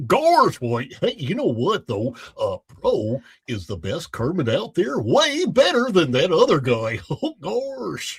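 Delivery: goofy cartoon dog voice, gosh drawn out. Asked by the others to give his best goofy voice, a Goofy voice. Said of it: "Give us your best goofy".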